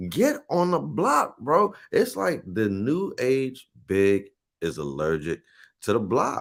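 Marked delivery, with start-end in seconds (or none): 0.1-1.8 mock, high, yelled fan screaming. Retelling what gets yelled while watching the team: imitating own screaming. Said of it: "I'm screaming".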